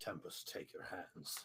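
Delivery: barely audible whispered muttering under the breath. Voicing his character as the assailants pass by, muttered under his breath. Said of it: "under his breath, he'll just mutter".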